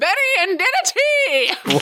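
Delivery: very high, frantic, swooping mad scientist voice. Given a phrase to say, delivering it: mad scientist, lab about to explode. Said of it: "As a mad scientist in the lab's about to explode".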